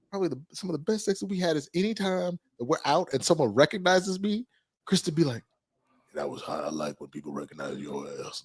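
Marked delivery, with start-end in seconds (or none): 6.1-8.4 very low, very quiet mutter, barely audible. On a show, retelling what your partner says when someone recognizes you, in a Sling Blade voice. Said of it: "Why'd you give it that sling blade ass voice?".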